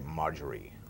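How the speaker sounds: dropped, hushed, soft low register. Actor showing how they voice an american role: lowered, deeper voice. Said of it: "I just lower the register and say".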